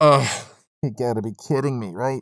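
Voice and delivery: talking through a facepalm. Reacting to a quoted last line, the speaker talks through a facepalm. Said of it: "if you want to know why my voice changed".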